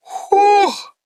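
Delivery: stunned whew, squealed out high.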